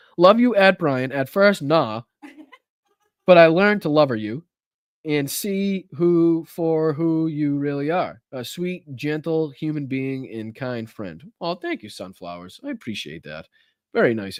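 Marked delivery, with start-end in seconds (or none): 0.2-11.3 slow, deliberate reading aloud, word by word. Speaker rereads a message addressed to him, reading slowly. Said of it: "I gotta read this slow".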